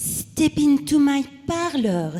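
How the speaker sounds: put-on, unhurried, slow, high-pitched French accent. Showing the panel the French accent they could have used: French accent. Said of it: "do a good French accent".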